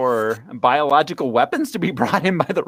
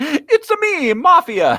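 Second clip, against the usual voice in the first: very high, drawn-out, swooping Italian accent; 14 semitones higher, 3 dB louder than usual. Joking about the family head's accent in a Mario voice. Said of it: "It's like Mario and Luigi's voice".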